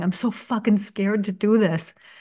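put-on crying. Recalling breaking down at the desk after five weeks without progress, retelling crying. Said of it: "I was just fucking crying".

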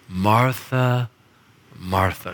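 loving, affectionate, deeply warm tone. Retelling Jesus speaking to Martha, acting out his loving tone. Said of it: "says something so lovingly".

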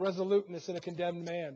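ordinary delivery

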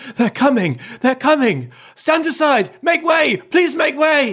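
out-of-breath, very high, urgent calling cry. Reading a story aloud, voicing a character who runs up, in a breathless voice. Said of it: "he says in a breathless voice".

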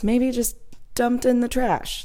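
hushed, high-pitched whisper. The speaker admits to something they don't want to say out loud: whispering. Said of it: "and I'm whispering this".

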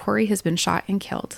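ordinary talk

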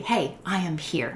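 plain

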